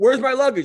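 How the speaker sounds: mock, loud, high-pitched shouting. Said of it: "Stop yelling at me".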